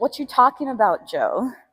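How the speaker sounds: put-on sarcastic voice. Speaker acting out how Spider would answer him, imitating Spider's sarcasm. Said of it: "hear your voice, how you say that".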